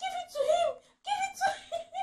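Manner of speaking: very high, loud shout, as across a distance. Retelling a monkey pulling at a bag: imitating own past shouting. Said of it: "And I was shouting".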